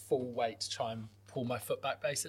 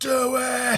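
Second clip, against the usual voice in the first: very high-pitched, pained scream; 12 semitones higher, 8 dB louder than usual. Retelling screaming at the guy fixing their foot, reenacting the scream. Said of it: "I'm like screaming at the guy like".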